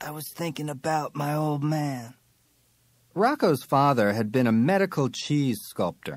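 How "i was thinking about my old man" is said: raspy, rough-edged whisper. Reading a story aloud, voicing a character's line: hoarse whisper. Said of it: "he'd say in a hoarse whisper".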